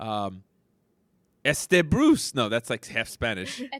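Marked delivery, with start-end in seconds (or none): 1.5-2.4 mock, attempted French accent. Asked to say Bruce in a French accent, trying a mock French accent. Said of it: "but in a French accent".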